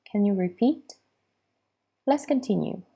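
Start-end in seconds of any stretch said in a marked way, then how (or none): 0.1-0.9 rising question lift at the end on repeat. Asking someone to repeat in an intonation lesson, rising pitch at the end. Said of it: "When I ask the question, my voice raises at the end".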